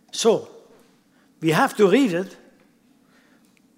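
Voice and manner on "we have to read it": firm, decisive delivery. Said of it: "but we have to read it slowly".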